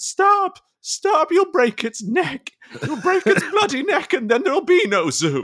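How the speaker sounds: very high, piercing, swooping put-on shriek. Retelling a film scene where an ostrich is wrestled into a car: Scarlett Johansson screaming. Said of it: "while Scarlett Johansson screams".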